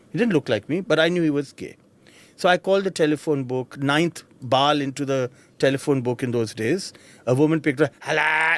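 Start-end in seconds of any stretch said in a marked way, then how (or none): 8.0-8.6 imitated raspy voice. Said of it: "auntie spoke like this".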